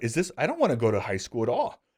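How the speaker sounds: ordinary talk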